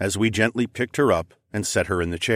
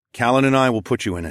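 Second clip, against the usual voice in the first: ordinary delivery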